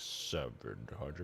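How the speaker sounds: very low, hushed, slow and drawn-out. Describing a voice on a recording, the speaker mimics how it starts: imitating slow speech. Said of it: "He starts really slow".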